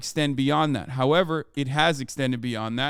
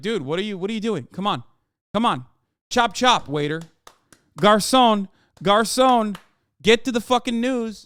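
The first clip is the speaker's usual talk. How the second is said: mocking, impatient, bossy voice, higher and louder; 7 semitones higher, 4 dB louder than usual. Imitating viewers who boss the speaker around like a waiter: imitating a bossy customer. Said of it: "bossing their servers and shit around that they're like".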